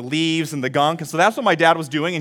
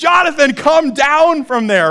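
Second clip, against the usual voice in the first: mock, very high, loud yell; 11 semitones higher, 6 dB louder than usual. Speaker recalling his mom seeing him as a toddler on the roof, imitating mom yelling. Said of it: "she yells".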